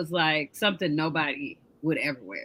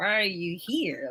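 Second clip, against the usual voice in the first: acted, nervous, hushed, wary tone; 5 dB quieter than usual. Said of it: "she's still nervous".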